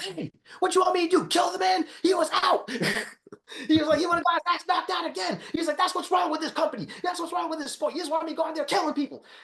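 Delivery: put-on excited shouting. Retelling a fighter's post-fight interview: imitating someone yelling excitedly. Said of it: "just yell at shit like that".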